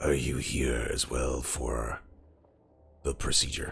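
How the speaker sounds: very low, hushed, rattling, creaky murmur. The narrator voices a man who turns and speaks to the player, in a rattly voice. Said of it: "in a rattly voice".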